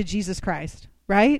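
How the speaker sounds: plain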